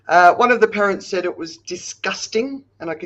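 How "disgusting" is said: heavy stress on the word disgusting. Recounting a parent's complaint about a statue: stress on DISGUSTING. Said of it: "I'm emphasizing the word disgusting".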